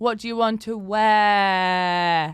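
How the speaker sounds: very slow, patronizing, with "wear" drawn out. Showing how to drop the R sounds: condescending, making someone feel stupid. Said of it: "like you're trying to make someone feel really stupid".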